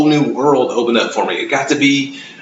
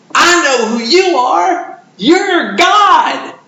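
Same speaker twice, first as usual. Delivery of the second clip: put-on delighted little girl, very high, slow, excited; 4 dB louder than usual. Retelling what a child from the class said: imitating a very excited child. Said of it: "with this most excited voice said".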